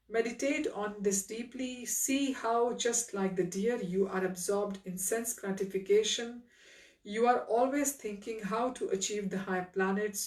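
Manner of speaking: ordinary delivery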